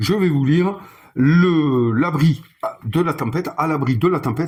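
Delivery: stumbling and restarting, drawn-out "le". A game host starts reading the opening text to the players, stumbling over words. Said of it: "je bafouille un petit peu".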